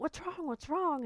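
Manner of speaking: high, alarmed voice.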